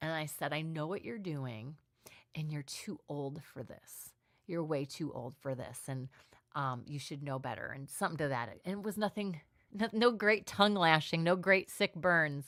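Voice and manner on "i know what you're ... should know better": mock trembling, soft, quivering, holding back tears. Recounting walking over to confront a group, retelling a quivering voice. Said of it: "I'm just quivering in my voice because I'm trying not to cry".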